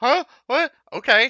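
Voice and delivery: very loud, very high blurt. Retelling how Julie reacted to the order: imitating the Julie voice. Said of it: "I love how it was like".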